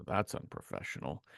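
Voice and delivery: under-the-breath mutter. Retelling a scene between two brothers: imitating a mutter under the breath. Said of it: "does the mutter under his breath".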